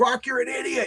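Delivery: acted-out high, frustrated scream with temper lost. Retelling arguing with an AI in the car: imitating himself screaming. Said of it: "me screaming".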